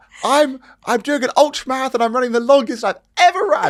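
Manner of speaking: high, loud, excited calling out.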